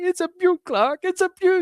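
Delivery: very high, welling-up, near-tears emotional voice. Retelling a film scene, the speaker quotes Clark's dad, imitating someone near tears. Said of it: "he comes over and he's near in tears".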